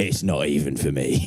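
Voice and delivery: slow, confiding, conspiratorial tone. Retelling what a hard-man cousin said, leaning across the table: imitating a conspiratorial tone.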